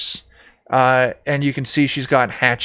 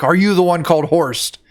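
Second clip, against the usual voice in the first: put-on, high, pitched-up yell; 5 semitones higher than usual. Game narrator voicing a woman holding a hatchet to Horst's neck, screaming in character. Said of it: "she's screaming at him like".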